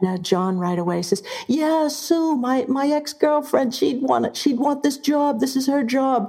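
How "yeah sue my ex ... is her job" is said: put-on Boston accent, higher pitch and slower pace. Retelling how a man recommended his ex-girlfriend for a job, in John's Boston accent. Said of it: "You do that accent frighteningly well".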